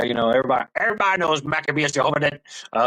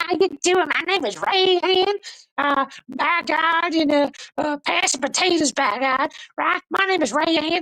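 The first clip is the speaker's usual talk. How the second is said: voice held very high throughout; 13 semitones higher than usual. Imagining how Rayanne talks: imitating Rayanne's very high voice. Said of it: "she's the one that talks really high all the time".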